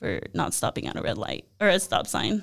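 play-acted sheepish, embarrassed, hushed whisper. Retelling how he answered what the warrant was for, imitating a very embarrassed voice. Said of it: "the most embarrassed voice".

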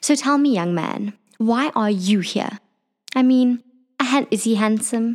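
prissy, prim and proper voice. Playing a character who questions a young elf: prim and proper voice. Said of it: "a little bit prim and proper".

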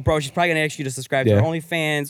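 ordinary delivery

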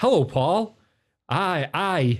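put-on odd Canadian and Scottish hybrid accent. Telling a friend how a guy greeted someone, in a weird Canadian Scottish hybrid accent. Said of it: "pure weird Canadian Scottish hybrid".

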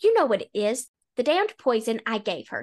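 ordinary talk

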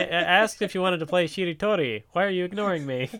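mock bored tone, acted. Retelling a scene where a bored hostage complains: imitating a bored character. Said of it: "she's just bored".

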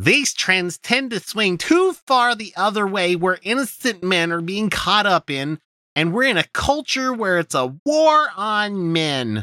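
showy, flamboyant put-on voice, very high pitch. Quoting what a man says, in a flamboyant voice. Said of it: "I'm just going to use a flamboyant voice".

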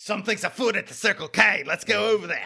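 put-on mixed accent with Australian vowels. After a co-host says he sounded Australian, speaker does weird Keanu Reeves–Steve Irwin mashup. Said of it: "A weird mashup of Keanu Reeves and like Steve Irwin".

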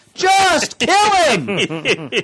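very high, loud, shrieking scream. Imagining Deemer's reaction to Odin's warning about Loki, imitating Deemer screaming. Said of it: "you can hear Deemer screaming".

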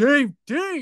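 mock cheering. Retelling someone in a clapping crowd: imitating someone cheering. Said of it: "someone behind me is just like".

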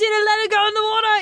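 put-on high Irish-accented voice. Retelling what Irish people said as a dog neared a swan: imitating Irish bystanders. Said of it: "all these Irish people are like".

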